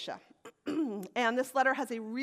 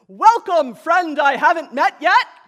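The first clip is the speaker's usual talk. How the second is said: gruff rough voice at full booming volume; 6 semitones higher, 16 dB louder than usual. Narrator voicing the great huge disciple greeting Goldilocks, in a great rough gruff voice. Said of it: "In their great, rough, gruff voice".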